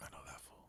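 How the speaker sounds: acted whispered words. Retelling seeing someone across the room: retelling own whisper. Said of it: "Why you gotta whisper it?".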